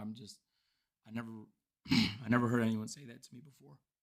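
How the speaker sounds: very quiet, low, hushed, fighting back tears. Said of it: "I know you're crying right now".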